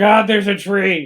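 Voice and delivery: mock scream. Recounting what he screamed out, retelling a scream. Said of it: "He's screaming out".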